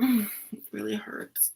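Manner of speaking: sulky, grumpy, pained complaining voice. Coaching someone on how to act to get the medicine, faking a bad mood. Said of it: "Be in a bad mood. Be like".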